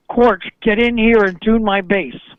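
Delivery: ordinary talk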